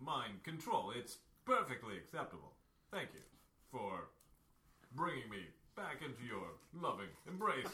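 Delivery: dreamy, blissfully obedient, compliant robot voice. Playing a robot captain now fully under mind control, thanking his controller in a dreamily compliant manner. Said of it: "and they have the robot captain strapped to a gurney with Lecter-like. He has a hockey mask over his face, but you can still see his piercing blue eyes glaring at you".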